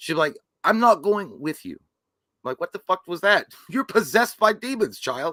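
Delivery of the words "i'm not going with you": put-on faltering American accent with British accent breaking through. Mocking an actress's failing american accent, british accent slipping in. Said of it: "You'll hear a British accent slip in".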